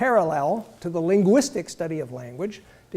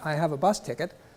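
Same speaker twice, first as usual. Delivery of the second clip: deadpan, really flat monotone with no energy; 4 dB quieter than usual. Showing how a plain statement sounds when said really flatly. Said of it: "when you say something really flatly".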